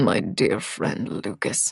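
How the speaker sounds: whispered, soft, slow, contemptuous sneer. A man answering the narrator's question of who told them: sneering. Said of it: "The sneering tone regarding his friend".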